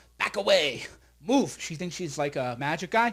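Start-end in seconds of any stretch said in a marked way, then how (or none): 0.2-1.6 put-on bossy child's tantrum voice, throwing a fit. The speaker quotes a daughter throwing a fit, imitating Cyber throwing a fit. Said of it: "Cyber likes to go".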